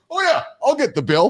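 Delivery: confident, self-assured tone. Retelling someone offering to get the bill: imitating a confident guy. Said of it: "he's all the confident guy".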